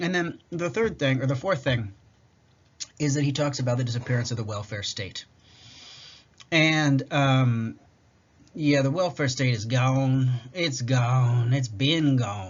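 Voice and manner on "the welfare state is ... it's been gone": slow, put-on southern drawl. Summarizing a book's argument, slipping into a voice: southern redneck accent. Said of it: "I just went with like southern, like redneck accent".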